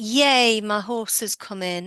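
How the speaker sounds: ordinary talk, nothing marked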